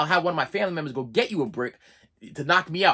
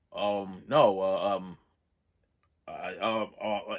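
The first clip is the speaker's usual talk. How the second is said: put-on stutter, lower and quieter; 7 semitones lower, 4 dB quieter than usual. Retelling a doctor's answer to a confused question: imitating a doctor stuttering. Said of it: "he's, like, stuttering".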